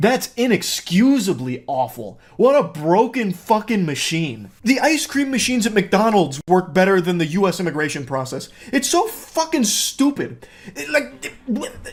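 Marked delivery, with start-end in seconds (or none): 8.7-11.9 very high-pitched, furious, heated stammering. Ranting about an immigration process, heated angry stammering. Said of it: "I'm actually hitting a full-blown Porky Pig [name]".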